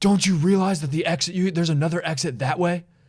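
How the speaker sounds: furious, scolding, angry yelling. Retelling what a mad driver in a parking garage yelled: imitating someone yelling. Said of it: "he's just yelling at me".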